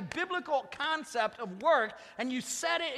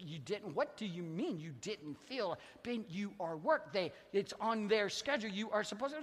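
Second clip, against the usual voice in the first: put-on fatherly tone; 5 semitones lower, 6 dB quieter than usual. Questioning Ben about skipping work, in his father's tone: put-on fatherly tone. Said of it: "I kicked into my father's tone of voice".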